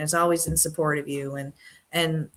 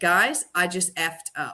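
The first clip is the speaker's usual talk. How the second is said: frank, candid, open tone. Retelling admitting a mistake to the whole company: retelling a loud admission. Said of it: "I said it loud enough for everybody to hear".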